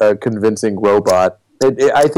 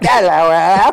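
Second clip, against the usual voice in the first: high-pitched, robotic droid voice with Cockney accent; 8 semitones higher than usual. Showing what a British-accent attempt for a droid would sound like; Cockney droid accent. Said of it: "it would be like the Cockney droid".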